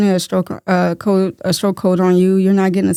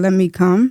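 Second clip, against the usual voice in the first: ordinary talk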